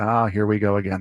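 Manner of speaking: put-on resigned, weary broadcaster voice with sigh. Retelling a broadcaster's call after a home run: imitating a broadcaster's resigned voice. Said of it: "you can hear it in the broadcaster's voice".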